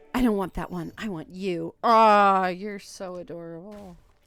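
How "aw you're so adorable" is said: incredibly, heavily sarcastic. Playing a game and calling something adorable: incredibly sarcastic.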